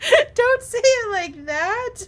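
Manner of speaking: high, loud mock crying whine.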